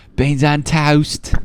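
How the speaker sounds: bad Cockney accent. Talking to viewers with a cohost, trying out an accent: bad Cockney accent. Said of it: "I was trying to do like a Cockney accent".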